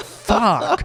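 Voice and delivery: very high, defeated voice. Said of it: "And it's like".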